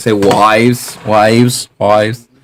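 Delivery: attempted, failed put-on Australian accent. Explaining Australian vowels, the speaker tries the word themselves in an attempted Australian accent. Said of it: "they pronounce their A's like I's".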